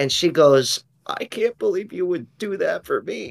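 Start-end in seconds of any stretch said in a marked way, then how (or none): 1.1-3.3 put-on, soft, high, weepy, tearful crying. Retelling what his girlfriend said when she came with his mom, imitating her crying. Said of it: "She starts crying".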